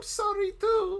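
squeaky, tearful, very high and loud.

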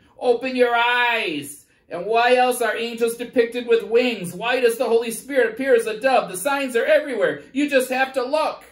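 shrill, very high, very loud squawking bird voice. Telling a parable, the speaker voices a bird addressing a crowd: squawking bird voice. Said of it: "the bird starts squawking".

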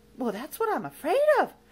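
shivering while speaking. After a witch curses him, he creeps away, shuddering. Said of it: "shuddered Lamont".

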